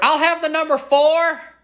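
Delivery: shrill, very high, loud yelling. Acting out a customer ordering food at the counter, answer the cashier while acting out a customer yelling. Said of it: "Sir, you don't have to yell".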